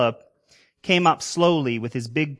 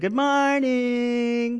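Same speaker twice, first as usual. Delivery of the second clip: high, snide, sarcastic, drawn-out yell; 8 semitones higher than usual. Students yell back at the teacher's greeting, sarcastic yelled greeting. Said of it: "yelled out sarcastically".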